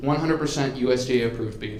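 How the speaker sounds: ordinary delivery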